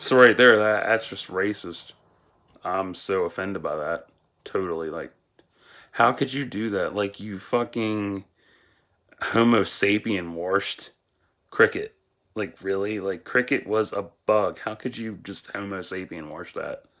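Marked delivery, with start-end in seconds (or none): none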